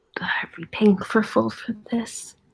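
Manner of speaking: whispered speech. In a role-play scene, a character asks another about paying full price, whispering. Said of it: "She whispers".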